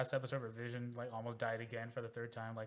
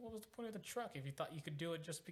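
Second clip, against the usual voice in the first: high, disbelieving put-on voice. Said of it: "I'm like".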